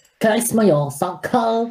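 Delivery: very high, exaggerated, over-the-top Chinese accent. Showing another reader how to read a line, exaggerated stereotypical Chinese accent. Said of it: "Do it in the biggest stereotypical Chinese accent".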